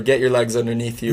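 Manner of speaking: normal talking voice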